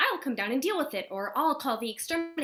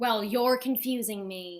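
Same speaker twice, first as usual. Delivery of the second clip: dry, mocking sarcasm. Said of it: "That was sarcasm".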